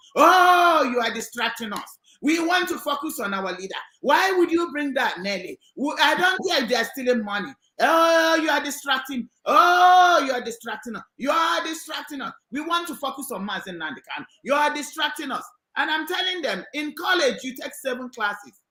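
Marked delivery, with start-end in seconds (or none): none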